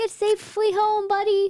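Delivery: very high shouted, called-out yell. Retelling calling out to a possum crossing the road: retelling a yell. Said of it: "and I yelled out".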